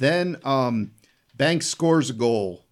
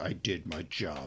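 mock very low, soft, slow, flat emotionless deadpan; 8 semitones lower, 13 dB quieter than usual. Retelling a kid's answer after an attack: imitating an emotionless kid. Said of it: "no emotion".

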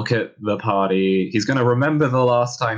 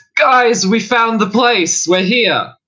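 very high-pitched, loud yelling; 13 semitones higher, 7 dB louder than usual. Voicing a character who opens the doors and calls to friends: yelling up the hallways. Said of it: "just yell up into the hallways".

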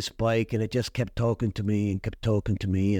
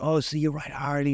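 mock worked-up, excited, eager tone; 4 semitones higher than usual. Retelling what a worker asked on seeing the jacket: imitating an excited worker. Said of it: "He was all excited".

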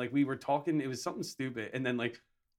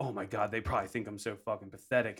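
ordinary talk

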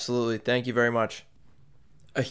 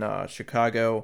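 usual speaking voice

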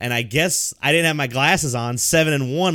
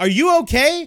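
put-on raised, high-pitched yell; 13 semitones higher, 4 dB louder than usual. Retelling someone's reply after the speaker cursed at the mirror, retelling a yell. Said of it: "she yells".

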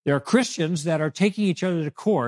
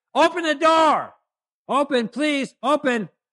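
acted-out, put-on yell, higher pitched; 9 semitones higher, 3 dB louder than usual. Acting out a quoted plea at a closed door: imitating someone yelling. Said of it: "I'm gonna keep yelling".

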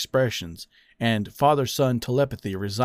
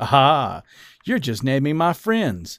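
amused, laughing voice; 3 semitones higher, 4 dB louder than usual. A man answers another's list of suggested names: laughing. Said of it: "Eddie laughed".

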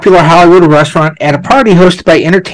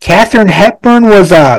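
loud blurted shout; 4 semitones higher than usual. Recalling reading a book in a store, retelling a yell out loud. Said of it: "I yelled out loud in the store".

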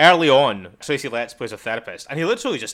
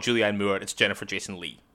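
plain

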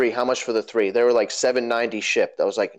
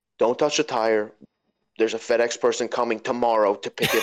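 put-on super-serious, mock-serious tone. Speaker retells what a woman on the phone said, imitating a super-serious tone. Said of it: "the woman got super serious on the phone".

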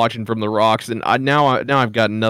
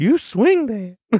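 put-on creepy old man voice, higher; 11 semitones higher than usual. Imagining a scene dubbed over: Herbert voice. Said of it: "gonna wanna hear Herbert's voice going like".

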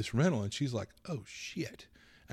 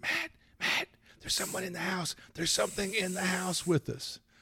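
urgent, high, scared, frightened hissed voice; 8 semitones higher than usual. Retelling being woken at 2 a.m. by Heather slapping him: imitating Heather's hissed warning.

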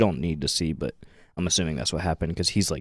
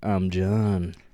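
fake seductive voice. Retelling how John introduced himself, in a mock-sultry voice. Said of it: "you could hear the sexual tension".

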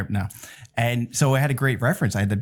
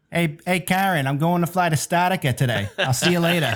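put-on Boston accent through every word, pitched up; 7 semitones higher than usual. Imagining how Goulian would talk, in Goulian's Boston accent. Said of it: "he's Boston. So I wonder if he probably says it like".

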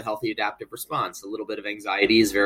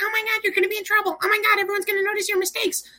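very high, squeaky little voice. Giving anxiety its own voice as a therapy technique: high-pitched squeaky voice. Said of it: "a high-pitched, squeaky voice".

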